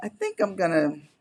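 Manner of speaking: plain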